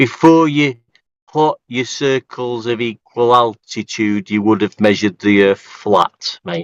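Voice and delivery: each word stretched and spelled out in exaggerated slow motion. Explaining the point again to another speaker: mock slow-motion speech. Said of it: "I'll say it in slow motion for you".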